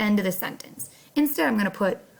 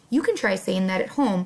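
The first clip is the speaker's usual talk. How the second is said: ordinary talk, nothing marked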